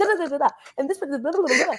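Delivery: double-speed, very fast sped-up gabble. Showing how confessionals sound when watched at double speed, imitating Ian talking at double speed. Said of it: "if you thought Ian talked fast".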